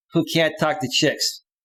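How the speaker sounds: ordinary talk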